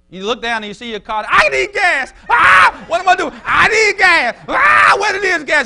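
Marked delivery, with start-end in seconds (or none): 1.3-5.6 mock, very loud, very high, antsy agitation. Acting out a churchgoer panicking about needing gas: imitating an anxious, agitated person. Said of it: "and you're anxious".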